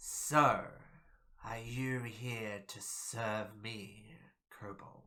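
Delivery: big, rasping, serpent-like creature voice. Narrator voicing a serpentine creature addressing a kobold, large booming raspy voice. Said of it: "in a large, booming, raspy voice".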